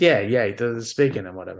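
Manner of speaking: ordinary talk, nothing marked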